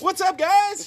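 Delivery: very high, loud, energetic shouted yell. Greeting everyone at the start of the show, yelling. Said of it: "you are yelling".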